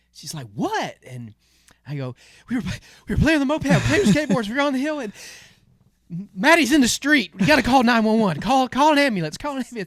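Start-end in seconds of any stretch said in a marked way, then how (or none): 2.4-9.8 put-on panicked yell, much higher, louder, faster. Speaker retells running into the house to tell Mom, retelling a panicked shout. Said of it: "sorry if that was loud".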